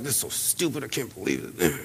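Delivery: put-on mumbling under breath. Speaker acts out a kid cleaning the car, mimicking muttering under breath. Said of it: "they were muttering and mumbling under their breath".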